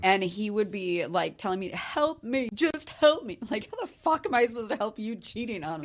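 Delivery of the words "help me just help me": high, drawn-out fake tearful sobbing, pleading. Retelling an ex's tearful plea after being caught cheating: imitating fake crying plea. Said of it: "he literally put on these big crocodile tears".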